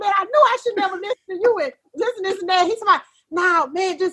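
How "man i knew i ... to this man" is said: put-on fast, angry, tearful crying rant. Retelling arguing with a man over a broken truck, imitating an angry cry. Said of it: "But it was like an anger cry".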